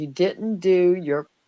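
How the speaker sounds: imitated angry tone. Retelling arguing with someone who kept yelling: retelling own angry words. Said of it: "I got angry back".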